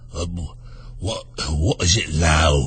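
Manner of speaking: very low, deep, hoarse, soft whisper. Narrator reading the story, Old Frog answers Alice: Frog's deep hoarse whisper. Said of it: "in a deep, hoarse whisper".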